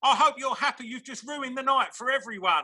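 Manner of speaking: high, tearful, crying, accusing voice. A DJ retells what a girl said after the dance floor cleared, imitating a crying girl. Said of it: "this girl was crying".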